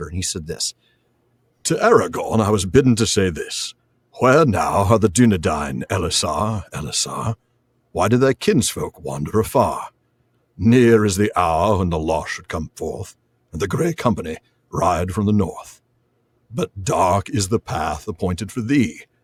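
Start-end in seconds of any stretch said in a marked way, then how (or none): 1.6-19.0 mock elderly wizard voice. Reading aloud Gandalf's message to Aragorn: uncanny Ian McKellen impression as Gandalf. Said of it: "an uncanny Ian McKellen impression".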